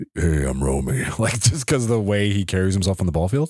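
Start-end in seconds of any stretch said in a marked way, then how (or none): 0.1-1.2 low, mean-sounding battle-axe voice. On a podcast, show how you expected the ball player you interviewed to sound: put-on battle axe voice. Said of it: "I thought he was going to have like a battle axe voice".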